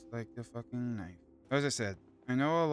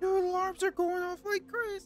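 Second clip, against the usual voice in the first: very high voice breaking up into a squeak; 4 dB louder than usual. As alarms go off everywhere, voice cracking. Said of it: "I'm sorry for that voice crack".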